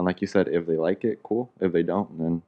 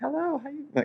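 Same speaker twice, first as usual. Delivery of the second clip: bright, very high customer service voice; 4 dB quieter than usual. Telling others about their job, speaker demos their customer service voice. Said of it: "you should hear that shit".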